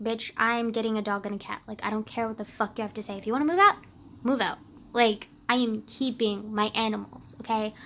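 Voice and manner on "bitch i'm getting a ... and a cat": usual speaking voice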